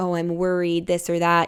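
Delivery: normal talking voice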